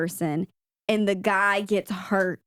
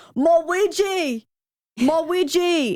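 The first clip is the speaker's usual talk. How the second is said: very high, very slow, acted, pained wail; 9 semitones higher, 4 dB louder than usual. Retelling a scene where an injured surfer cries out: imitating someone yelling in pain. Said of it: "yelling out in pain".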